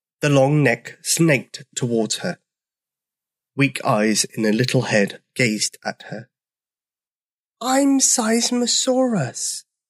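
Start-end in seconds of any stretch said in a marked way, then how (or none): 7.6-9.6 very high, barely audible tiny squeak. An enormous dinosaur answers Brenda's question in a tiny voice. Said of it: "in a voice so tiny she could hardly hear it".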